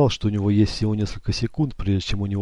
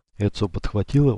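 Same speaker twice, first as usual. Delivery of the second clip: ordinary delivery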